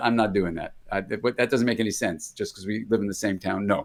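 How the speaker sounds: ordinary delivery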